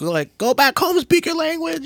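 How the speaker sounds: high, loud, mocking yelling.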